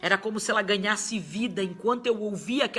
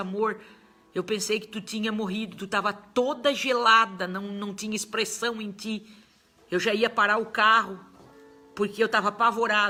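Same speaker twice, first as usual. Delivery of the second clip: ordinary delivery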